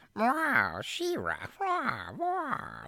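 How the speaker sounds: very high-pitched cartoon villain voice, slow cat-like drawl. Explaining the She-Ra villain to a co-host, cat-like Catra voice. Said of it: "she talks like a cat".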